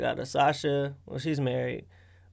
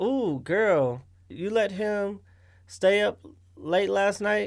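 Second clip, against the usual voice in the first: high-pitched woman's voice; 6 semitones higher than usual. Imitating what the other speaker's friends might say: imitating a female friend. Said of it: "your impression of "ooh, girl" is a female".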